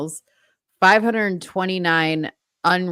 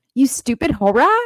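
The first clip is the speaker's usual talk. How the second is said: high, insolent, rude little talking-dog voice; 6 semitones higher, 4 dB louder than usual. Speaker voicing the pet dog's reply at breakfast time, Pickles voice. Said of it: "she'll be like".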